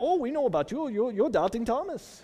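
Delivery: put-on Indian accent. Retelling how people in India greeted him, imitating an Indian accent. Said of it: "only kind of sort of accent I can do".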